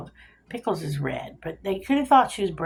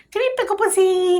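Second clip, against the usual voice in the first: very high, sugary, raised coaxing call; 13 semitones higher, 9 dB louder than usual. Retelling calling a runaway dog back: retelling talking nicely to a dog. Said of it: "You talk nice to them".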